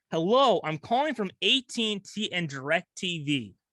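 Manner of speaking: ordinary talk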